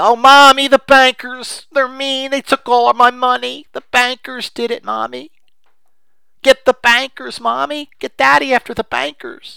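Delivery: put-on very high, whining, whiny baby talk voice. Mocking people who cry for mommy about the bankers, the speaker puts on baby talk. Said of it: "That to me is baby talk".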